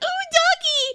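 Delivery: put-on very high, thrilled, excited squealing outburst. Retelling how a woman playing a zombie saw a dog: retelling an excited outburst. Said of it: "she got all excited and she was like".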